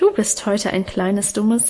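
ordinary delivery

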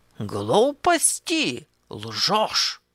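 animated exclamation with big swooping pitch leaps. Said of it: "закричал ювелир".

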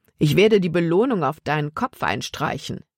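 ordinary delivery

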